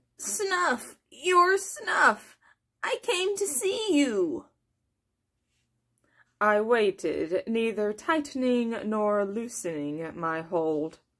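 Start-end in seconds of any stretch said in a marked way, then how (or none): 0.2-4.5 high talking rat voice, cornered and scared. Reading a story, voicing a rat held by the narrator, in a rat voice.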